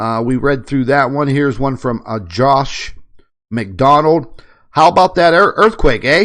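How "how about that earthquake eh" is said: loud put-on Canadian accent. Reading out a message sent in about the earthquake, in a Canadian accent. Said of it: "Practicing my Canadian accent there".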